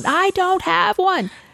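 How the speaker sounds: put-on very high-pitched shouting, yelling. Recounting a call to an automated phone system, retelling a yell. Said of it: "yelling into the phone".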